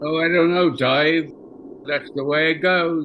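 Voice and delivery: put-on Cockney accent. Retelling how the assistant director voiced Hal: Cockney accent imitating Derek Cracknell. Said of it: "Sort of the Cockney accent".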